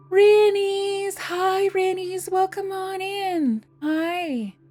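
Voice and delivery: high, slow soothing coaxing. Greeting a viewer who just arrived in chat: talking like to a skittish puppy. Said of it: "the way I would talk to like a skittish, adorable puppy".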